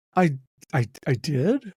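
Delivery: shocked, caught-off-guard voice, stammering. Told by his podcast partner that he inspired him this morning, he answers shocked, stammering. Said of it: "Why you sound so shocked?".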